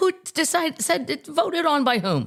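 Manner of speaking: mock indignant disbelief.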